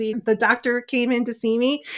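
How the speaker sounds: ordinary delivery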